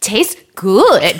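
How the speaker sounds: put-on light German accent. Quoting the little boy's reply about his food: little German tourist accent. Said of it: "talks like a little German tourist".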